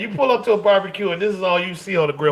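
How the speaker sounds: usual speaking voice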